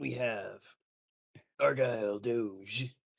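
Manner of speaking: very slow, ominous, foreboding, words stretched out. Introducing the next player at the table: mock ominous announcement. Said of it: "Why did you say it like that?".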